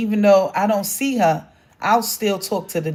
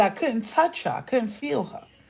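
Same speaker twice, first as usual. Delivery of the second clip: usual speaking voice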